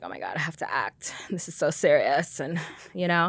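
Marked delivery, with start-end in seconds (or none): 0.0-2.4 anxious, stressed-out, breathy fretting whisper. Retelling how an ex talked about having to act: imitating someone stressed out. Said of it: "be so stressed out".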